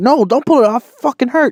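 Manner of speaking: mock, very high, shrill, full shriek. Retelling screaming as mom pulls at the ring: imitating screaming. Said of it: "I'm screaming at her".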